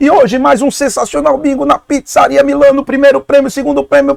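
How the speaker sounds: reedy, thin, very high-pitched announcer voice. Retelling his childhood bingo announcing at his father's pizzeria, as a thin-voiced female announcer imitation. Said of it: "Eu com a voz fininha".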